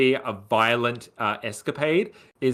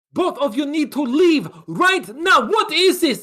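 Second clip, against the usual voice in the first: put-on Eastern European accent, very high and loud; 13 semitones higher, 5 dB louder than usual. In an improvised scene, a character orders two others to leave: eastern european accent. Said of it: "Eastern European accent".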